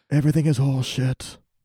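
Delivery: put-on brooding northern voice. Doing a character impression for another speaker: Jon Snow voice. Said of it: "that's my Jon Snow".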